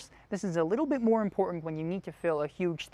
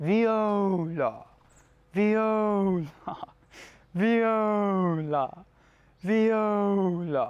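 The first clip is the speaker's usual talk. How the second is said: very slow, breathy voice from the throat; 2 semitones higher, 4 dB louder than usual. Leading a vocal exercise, saying the word four times in a breathier throat voice. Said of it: "It's a little breathier".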